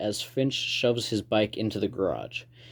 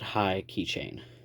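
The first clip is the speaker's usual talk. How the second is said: usual speaking voice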